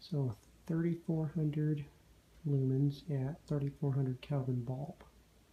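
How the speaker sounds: very soft, hushed, quiet talking.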